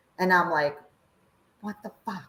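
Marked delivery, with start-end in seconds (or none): 1.6-2.3 mock hushed angry outburst, very soft. Retelling a reaction after an ally was voted out: retelling own angry outburst. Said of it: "I was so pissed off".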